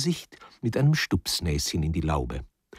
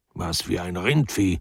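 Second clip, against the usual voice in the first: plain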